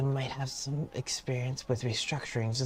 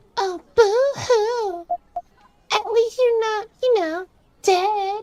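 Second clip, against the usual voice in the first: put-on very high, very loud spooky ghost-girl voice; 9 dB louder than usual. Portraying a ghost girl who answers another character: ooh-woo ghost girl voice. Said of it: "That's how I'm portraying this ghost girl".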